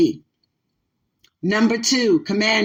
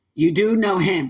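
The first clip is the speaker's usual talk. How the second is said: ordinary talk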